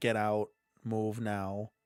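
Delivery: slow, hushed demonic half-whisper. Retelling what demons in a video said: imitating a half-whispering demon. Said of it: "the demons were whispering".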